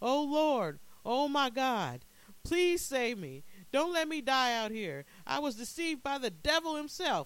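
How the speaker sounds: very high, shrill, desperate pleading cries. Narrator voices a man staggering lost in the blinding desert, crying out. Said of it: "he cried".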